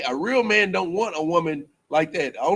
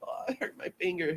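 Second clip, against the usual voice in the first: delicate, hushed, soft, breathy dainty-woman voice; 11 dB quieter than usual. Speaker describing the kind of woman every man wants, imitating a dainty woman. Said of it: "a woman that's just kind of dainty".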